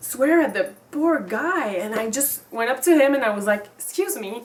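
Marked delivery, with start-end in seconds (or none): 3.8-4.4 forced polite tone over audible annoyance. Retelling approaching a man who swore: imitating own smiling polite tone. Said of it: "with the smile".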